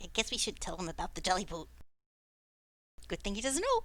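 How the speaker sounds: mumbling under the breath. Voicing a character who mumbles about the boat: mumbling under his breath. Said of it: "mumbles under his voice".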